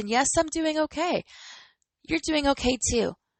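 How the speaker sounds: smiling, lifted voice with an audible smile. Speaker reassures listeners during a sidebar, smiling voice. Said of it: "you can hear the smile in my voice".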